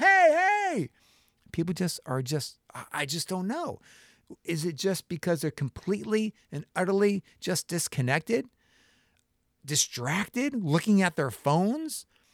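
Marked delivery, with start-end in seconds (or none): 0.0-0.9 very high, loud shouted yell. Retelling yelling at cars blowing past a stopped bus: retelling a yell. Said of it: "I'm yelling".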